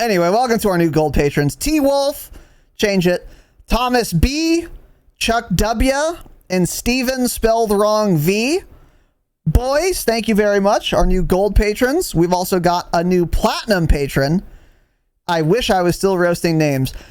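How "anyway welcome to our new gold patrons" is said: rattled off super fast. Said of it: "I wanted to read 'em all fast as, like, a joke, super fast".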